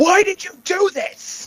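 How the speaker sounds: very high, accusing yell in a put-on voice. Voicing a character who intimidates another by yelling: in-character yell. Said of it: "she just yells".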